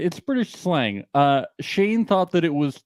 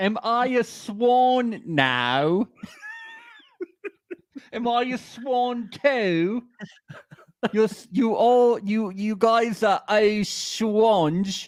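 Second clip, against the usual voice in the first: put-on British accent, much higher pitch; 8 semitones higher than usual. Speaking to the group, in a put-on British accent. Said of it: "Do I sound British?".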